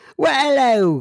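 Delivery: Scottish accent sliding into Australian. After reading a letter from a Scottish listener, greeting him, Scottish accent slipping into Australian. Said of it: "I went from like uh, Scotland uh, to a uh, more of a, I think, uh, an Australian accent".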